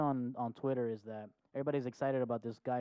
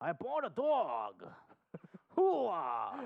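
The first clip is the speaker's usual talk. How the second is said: swooping, pitched-up tune landing on hoo-ah; 6 semitones higher than usual. Doing an actor impression the other speaker praises: Al Pacino impression. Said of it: "That's way better than mine".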